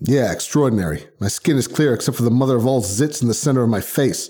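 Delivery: plain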